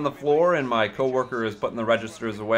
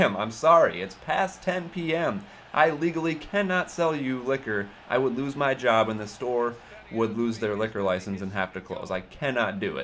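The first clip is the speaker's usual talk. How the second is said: usual speaking voice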